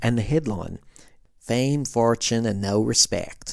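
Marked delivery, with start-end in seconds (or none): 1.4-3.5 clumsy, very bad, fake put-on American accent. Reading a 1988 LA Times headline aloud, very bad American accent. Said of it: "read this in a very bad American accent".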